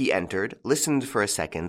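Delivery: ordinary delivery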